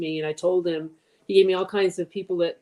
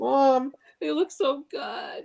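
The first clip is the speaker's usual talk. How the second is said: very slow, high, tearful sobbing words; 8 semitones higher than usual. Retelling a child's first words out of surgery, imitating Rowan crying. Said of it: "And he's crying".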